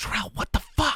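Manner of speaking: hushed whispered voice. Voicing an unseen figure calling to a hidden character: whispered voice. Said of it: "a whispered voice go".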